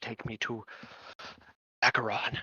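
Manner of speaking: quiet mumbling muttered to self.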